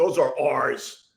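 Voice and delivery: put-on cross, irritated, angry voice. Telling a story about a guy who came over to their seats, retelling his angry voice. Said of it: "The angry voice".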